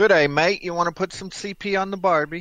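put-on high Aussie-accented voice. Speaker imitating a man they say sounds Australian, in an Australian accent impression. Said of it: "He sounds Australian".

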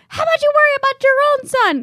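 high-pitched, loud yelling.

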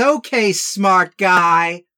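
stock floozy character voice. Describing a film character the speaker calls a floozy: imitating the floozy character's voice. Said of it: "she talks like this and says".

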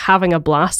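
ordinary delivery

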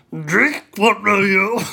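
deep, small, sage creature voice. Reading a scene aloud in the voice the others asked for: Yoda voice. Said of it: "I'll do it in Grover voice, which is Yoda voice".

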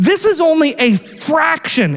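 "fraction" stressed, slow and emphasized.

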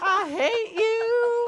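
mock very high, shrill shouted outburst. Retelling interrupting a sister's phone call as a child: imitating own past yelling. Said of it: "I would just start yelling".

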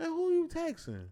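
playful mock-accusing tease, very high pitch. Retelling a joke to a girl on her phone sitting next to him: retelling a joking remark. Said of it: "I jokingly said".

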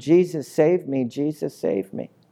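ordinary talk, nothing marked

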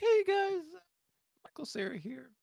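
tiny high-pitched voice. Answering what a casting pick sounds like: Michael Cera impression. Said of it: "It's like".

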